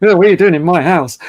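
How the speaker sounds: fast, gruff, seventy-something cowboy voice. Retelling first meeting her husband the next morning, imitating a gruff old man. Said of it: "he was really gruff".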